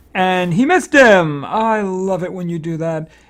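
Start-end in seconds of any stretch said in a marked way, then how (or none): 1.5-3.1 ironic, tongue-in-cheek, dry sarcastic tone. Reacting in a game after a missed attack: sarcastic. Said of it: "I am being sarcastic".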